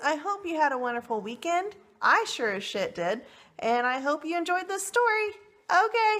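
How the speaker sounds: rising voice. Signing off to viewers after telling a story, voice getting higher. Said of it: "now my voice is getting higher".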